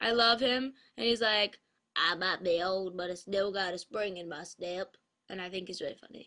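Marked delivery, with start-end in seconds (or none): 2.0-5.0 cartoon dog voice, much lower, slower. Speaker names a favorite Toy Story character and does a Slinky impression. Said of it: "my Slink impersonation".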